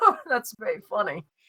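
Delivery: words spoken through pleasant, light laughter. Game master voicing a woman character, laughing pleasantly while talking. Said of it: "She starts laughing very pleasantly".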